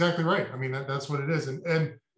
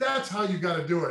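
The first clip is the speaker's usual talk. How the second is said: mock angry outburst, put-on anger; 2 semitones higher than usual. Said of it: "he's pretending to be mad".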